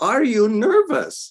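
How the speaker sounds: put-on thick, strong German accent, very high and loud. Retelling a voice behind you in the wings asking again: Deva's strong German accent. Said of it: "A strong German accent".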